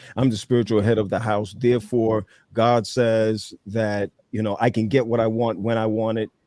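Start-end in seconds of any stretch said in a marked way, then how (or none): none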